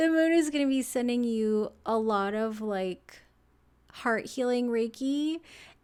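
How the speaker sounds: emotional, close to crying. Giving a moon reading and getting emotional, on the verge of tears. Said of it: "I'm gonna cry".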